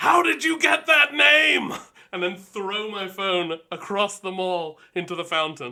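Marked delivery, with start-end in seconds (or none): 0.0-1.7 very loud, high, slow scream. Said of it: "I just scream into my phone".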